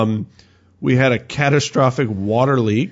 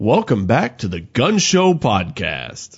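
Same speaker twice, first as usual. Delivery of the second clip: put-on radio announcer voice, swooping and slow. Podcast host opening the episode in a fake announcer voice. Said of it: "My fake announcer voice?".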